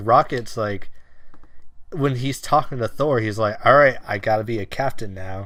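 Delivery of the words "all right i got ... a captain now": ordinary talk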